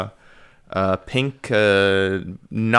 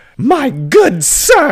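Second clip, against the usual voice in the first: very high-pitched, affronted, indignant outburst; 9 dB louder than usual. Acting as Blanche stepping back after being caressed: indignant exclamation. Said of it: "and is like".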